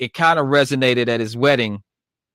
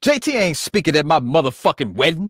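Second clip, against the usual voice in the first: high, pitched-up, declaring delivery; 5 semitones higher than usual. Quoting what he said about the wedding, retelling a line said loud. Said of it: "he said it loud as".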